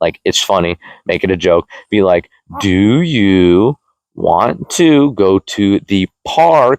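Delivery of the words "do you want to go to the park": very slow, condescending, talking-down voice. Advising how to repeat a question to someone, talking like they're stupid. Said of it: "talk them like they're stupid".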